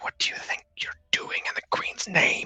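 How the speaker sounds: close, hushed, secretive whisper. Voicing an innkeeper who leans close to one player: whispering innkeeper. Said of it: "lean close and whisper to just you".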